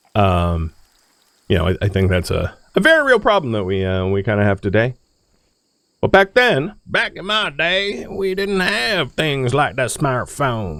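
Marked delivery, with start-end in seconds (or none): 6.0-10.8 put-on, pitched-up Southern American accent throughout. Speaker slips into an unneeded southern accent mid-story: southern accent. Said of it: "I did that in a southern accent".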